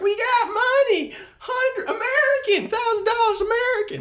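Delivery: mock shrill, very high, drawn-out hollering. Retelling how Jan shouted to others in the ocean from the shore: imitating someone shouting. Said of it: "shouting at them from the shore".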